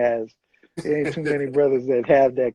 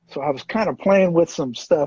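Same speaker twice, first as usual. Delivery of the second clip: ordinary talk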